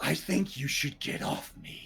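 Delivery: quiet, soft, menacing, threatening undertone. Voicing a masked figure telling a player to get off: quiet menacing voice. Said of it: "just quietly says to you".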